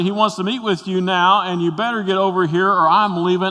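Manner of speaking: put-on frantic, panicked, high-pitched urgent voice. Retelling what a secretary said on the phone: imitating a panicked voice. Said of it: "My secretary is in a panicked voice".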